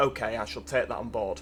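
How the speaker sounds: ordinary delivery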